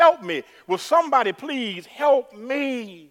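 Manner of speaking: acted, loud, high, drawn-out, pleading scream. Telling a story of a man dangling over a cliff, the speaker is retelling a scream for help. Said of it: "he screams out with a loud voice".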